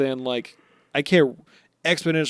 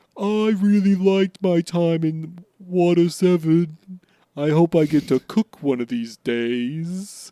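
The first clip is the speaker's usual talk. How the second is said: put-on light British accent, "days" drawn out; 4 semitones higher than usual. Doing all the Sanji bits, Sanji voice with a slight British accent. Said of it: "You got a little British there".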